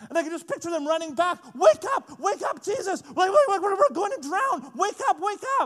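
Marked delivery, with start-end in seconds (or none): 1.5-5.7 mock frantic yelling in full panic, high. Picturing the disciples running back to wake their teacher, acting out panicked shouting. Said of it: "And then they start panicking".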